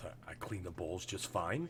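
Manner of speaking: low, soft mutter under the breath. Voicing a kitchen worker after a dirty look: muttered under breath. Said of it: "you hear under their breath".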